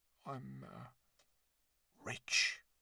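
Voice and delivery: secretive whisper, voice dropped right down. Reading a story aloud, a lonely islander confides to Jim: lowering voice to a whisper. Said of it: "lowering his voice to a whisper".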